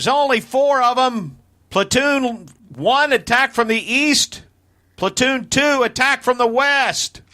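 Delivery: loud yell, pitched way up. Yelling orders to attack as a character: loud in-character yell. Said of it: "And I'm going to yell".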